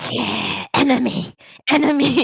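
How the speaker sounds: very loud, high-pitched hissing spider voice. Narrator voices a spider on the wall reacting to a rolled-up newspaper, hissing spider. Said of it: "also hisses at you and goes".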